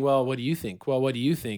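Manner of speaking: usual speaking voice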